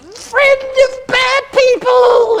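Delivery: shrill, very loud, high, drawn-out creature scream. Game master voicing a kobold that jumps from the hedge: screaming kobold. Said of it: "It's screaming like a".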